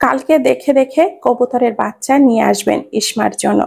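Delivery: ordinary delivery, nothing marked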